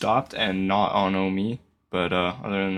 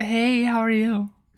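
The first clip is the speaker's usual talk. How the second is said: very high, feigned put-on voice; 12 semitones higher than usual. Asked to do the voice again, the speaker greets them in a high put-on voice. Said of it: "do that again, please".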